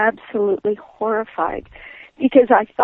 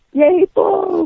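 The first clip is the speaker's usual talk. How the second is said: put-on kid's voice, high, excited cheering shout; 8 semitones higher than usual. Recalling cheering for the bull as a little kid at the stadium, retelling a yell. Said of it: "I started yelling".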